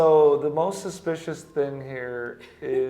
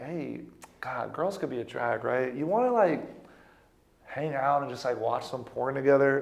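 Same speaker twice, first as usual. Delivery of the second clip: mock nonchalant, super laid-back, offhand casual tone; 3 dB quieter than usual. Retelling a message a guy sent: imitating a nonchalant guy. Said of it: "he was, like, so nonchalant".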